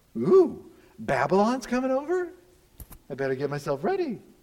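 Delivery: preening, primping, vain-sounding voice. Retelling how Judah dolls herself up as invaders attack: voicing Judah dolling herself up. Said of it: "She's dolling herself up for false gods".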